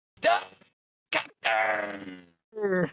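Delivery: put-on game announcer voice. Showing how the game's announcer says the title: imitating the game's announcer. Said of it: "you gotta say it like the announcer does".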